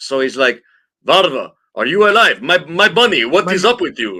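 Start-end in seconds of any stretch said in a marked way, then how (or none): 1.1-4.2 fake Russian accent, higher and louder. Reading out a streamer's translated words after asking for Russian accent actors: put-on Russian accent. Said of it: "Russian accent actors in the house?".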